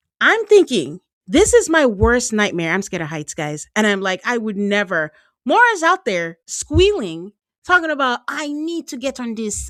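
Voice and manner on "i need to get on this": put-on Jamaican accent, high and soft. Retelling volunteering for a helicopter ride, imitating Mora in a Jamaican accent. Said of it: "This is a Jamaican accent".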